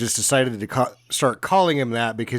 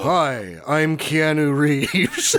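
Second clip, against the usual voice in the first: very slow, drawn-out speech; 3 semitones higher than usual. Retelling a movie scene, imitating a confused Keanu Reeves. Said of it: "Keanu Reeves on screen twice goes".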